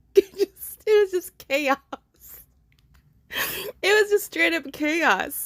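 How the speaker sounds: high delivery, laughing through the words. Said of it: "I'm laughing because".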